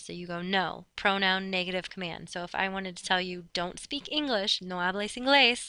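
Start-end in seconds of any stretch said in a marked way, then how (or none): none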